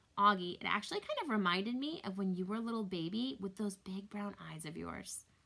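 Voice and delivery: ordinary talk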